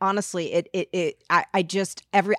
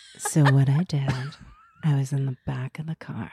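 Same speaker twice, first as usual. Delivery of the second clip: deep, put-on, announcer-style voiceover narration voice; 6 semitones lower than usual. Explaining what happened in the car, as asked: put-on voiceover voice. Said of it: "do it in your voiceover voice".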